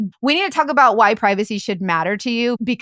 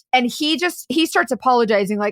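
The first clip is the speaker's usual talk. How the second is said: ordinary talk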